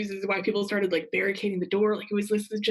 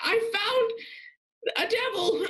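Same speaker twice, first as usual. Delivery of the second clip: very high, nervous yell, sounding distant; 13 semitones higher than usual. Narrating to Oliver and Miria, a voice calls from farther inside, Gimbal yelling nervously. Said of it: "it sounds very nervous and is yelling".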